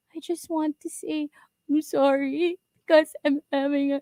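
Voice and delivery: imitated crying, tearful voice. Retelling what a person said while crying after being scolded: imitating someone crying. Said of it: "she's crying".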